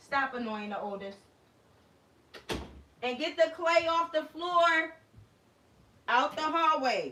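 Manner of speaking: loud shouting, rising pitch. Breaking off mid-conversation to call out instructions to Khalil, yelling. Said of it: "Excuse me for me yelling".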